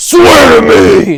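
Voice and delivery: very loud, high-pitched bellowing. Quoting a favourite movie line, Batman voice. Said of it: "The voice is a little silly".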